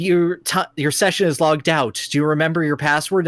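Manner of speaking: ordinary talk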